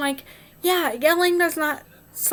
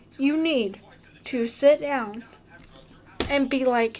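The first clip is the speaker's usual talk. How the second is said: plain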